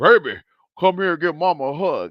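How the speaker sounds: deep, loud ghostly voice. Retelling a dream where a spirit posing as mama calls: imitating a deep spirit voice. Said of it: "that voice was deep".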